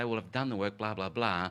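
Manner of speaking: normal talking voice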